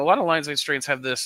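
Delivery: voice breaking and cracking mid-phrase. Speaker explaining something when their voice suddenly cracks. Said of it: "my voice just cracked".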